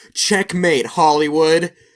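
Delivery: loud, high, triumphant screaming.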